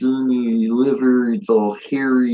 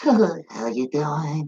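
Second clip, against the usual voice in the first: slow, creeping, play-acted creepy sweet-talking voice; 4 semitones higher, 4 dB quieter than usual. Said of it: "she would creep up on it all like".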